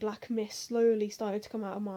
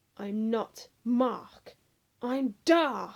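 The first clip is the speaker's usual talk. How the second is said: very slow, drawn-out, menacing hiss; 4 dB louder than usual. Narrator reading a character's line in a second-person story, hissed. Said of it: "he hissed".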